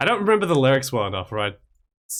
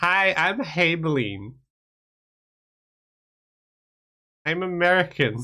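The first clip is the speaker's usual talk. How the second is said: put-on high, very slow, drawn-out Valley Girl drawl; 5 semitones higher than usual. Doing an impression someone requested, sounding like a valley girl. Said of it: "Do a Haeblean impression".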